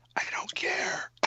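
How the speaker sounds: unvoiced whisper, guilty-sounding.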